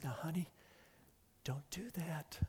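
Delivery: whispered, hushed tones, very quiet. Demonstrating how a parent might warn a child, in a hushed whisper. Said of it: "say in whispered, hushed tones".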